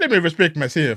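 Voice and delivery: put-on deep Jamaican patois accent. Mocking a man who talks like a yard man around his brethren, yard-man Jamaican voice. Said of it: "he want to speak like a yard man".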